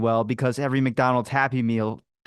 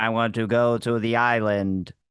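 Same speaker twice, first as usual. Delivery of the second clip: robotic computer-like voice. Recalling a first voiceover audition, the speaker repeats a line in a Stephen Hawking voice. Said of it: "do Stephen Hawking or something like that?".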